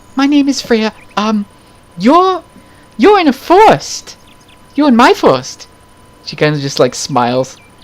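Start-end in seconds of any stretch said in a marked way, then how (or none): 0.1-5.6 shy character voice, much higher and slower. A game master voicing a character introducing herself to the players, timid and shy. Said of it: "timidly comes out from behind the head and is like".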